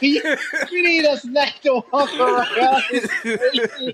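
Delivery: high, helpless laughing through every word. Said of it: "I'm crying real tears".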